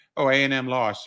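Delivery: ordinary delivery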